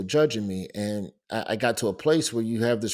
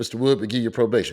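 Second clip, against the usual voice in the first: put-on muttering mumble under the breath; 3 dB louder than usual. Retelling the lawyer's reaction in court: imitating a mumble under his breath. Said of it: "damn near mumbled under his breath".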